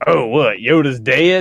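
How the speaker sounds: oblivious, clueless, awkward tone. Retelling a guy who swore he was a Star Wars fan, imitating him. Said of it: "he talked like this".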